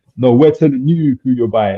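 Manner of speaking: put-on American-accented speech. Retelling what Bowden said to him: Bowden American accent. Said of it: "in his American accent".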